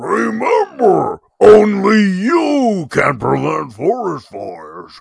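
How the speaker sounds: very high, very loud, rough, booming announcer bellow. Speaker recreates a forest-fire safety announcement, imitating a huge voice. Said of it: "he had a huge voice".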